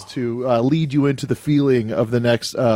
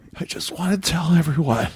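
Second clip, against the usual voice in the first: put-on gravelly, serious, hoarse voice; 4 semitones higher than usual. Retelling how a thank-you came out after losing the voice: imitating own gravelly serious voice. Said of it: "what it came out was like".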